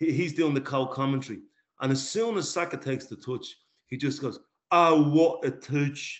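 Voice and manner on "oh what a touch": put-on loud, very slow, drawn-out Cockney French accent, raised. Quoting a co-commentator's reaction to Saka's touch, in Jérémie Aliadière's Cockney French accent. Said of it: "in his kind of Cockney French".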